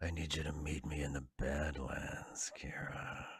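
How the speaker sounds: very soft, slow, hushed, unsettling creepy voice. Quoting a line while joking with another speaker: imitating a creepy voice. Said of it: "Everything you said was creepy".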